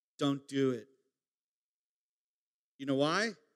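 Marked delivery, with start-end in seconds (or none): 0.2-0.9 whispered voice. Retelling a moment in church, urging a friend: retelling a whisper. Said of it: "I whispered to Craig".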